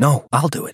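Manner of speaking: sharp, high, snapped delivery. Luke, jerking his arm away from Therese, refuses her help, snapped sharply. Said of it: "he snapped".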